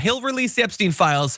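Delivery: ordinary delivery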